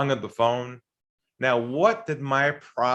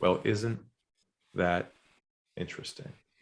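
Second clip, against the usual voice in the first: calm, lowered, breathy near-whisper; 5 semitones lower, 7 dB quieter than usual. Retelling what they said to a man at a big company, retelling a lowered calm voice. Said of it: "I lowered my voice".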